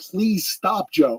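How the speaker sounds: pleading tone through laughter and tears. Retelling begging him to stop, retelling a laughing-crying plea. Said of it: "I'm like laughing and crying".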